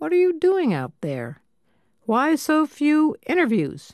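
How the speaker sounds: acted severe, reproachful scolding. Narrator quoting the fire ecologist questioning the progress reports, stern scolding tone. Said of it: "in a stern, scolding tone".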